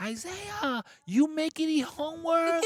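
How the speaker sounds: mock very high, drawn-out scolding scream, broken English. Recalling how his mother used to call him, retelling mother's scream. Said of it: "she used to scream".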